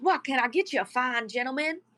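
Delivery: put-on old man character voice. Voicing the older guy greeting the players as customers: voicing an old man. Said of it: "He says".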